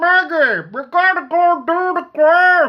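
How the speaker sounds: slow drawn-out drawl, very loud and very high. Imagining how a book's trickster character talks: Jeff Bridges voice. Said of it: "imagining the voice of Jeff Bridges for this guy".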